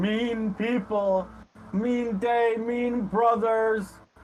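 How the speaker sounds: tearful, high-pitched crying voice, very slowly drawn out. Game narrator voices a dwarf who keeps crying, in a crying voice. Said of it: "he's still kind of crying all the while".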